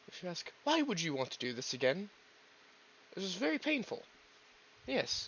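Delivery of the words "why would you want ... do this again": normal talking voice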